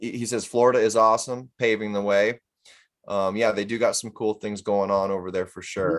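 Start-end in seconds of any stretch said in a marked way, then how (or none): none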